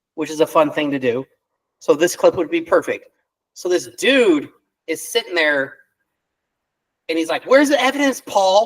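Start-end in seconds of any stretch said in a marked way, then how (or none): 7.5-8.7 screaming in a high, very feminine voice. Describing a clip to make fun of on the show, imitating screaming in feminine voice. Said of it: "screaming in a very feminine voice".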